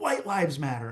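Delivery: loud yell. Recounting a confrontation with a lawyer, repeating what they yelled, retelling own yell. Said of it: "and I yelled".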